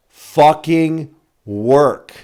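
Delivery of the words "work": strong stress punched on the word "work". Explaining which word he needs to emphasize: stress on work. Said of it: "I need to emphasize the word work".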